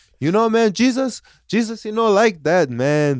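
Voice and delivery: high, halting, simple, broken non-native English. Retelling what a coworker said about swearing: imitating coworker's broken english. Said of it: "he speaks, like, super broken English".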